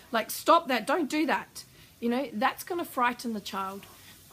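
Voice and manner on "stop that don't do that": loud, domineering, overbearing, bossy scolding voice. Showing how our tone turns when frustrated with a child: overbearing tone. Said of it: "our tone of voice can become quite overbearing".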